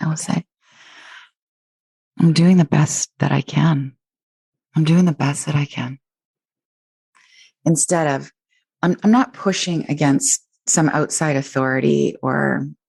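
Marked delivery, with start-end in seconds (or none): 2.2-6.0 loving, kind, reassuring tone, lower pitch. Showing how to speak to yourself with compassion: loving self-compassionate tone. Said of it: "notice the energy in my tone when I say this".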